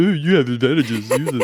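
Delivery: mocking repetition. It repeats back advice just given to Shunk, mocking. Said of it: "And it just mockingly says".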